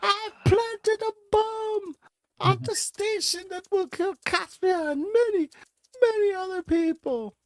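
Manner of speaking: very high, shrill scream, pitched way up. A captured character under interrogation confesses to her captors, screaming in character. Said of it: "She screams".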